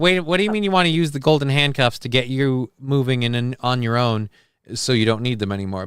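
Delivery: ordinary delivery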